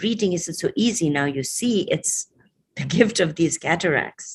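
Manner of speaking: plain reading voice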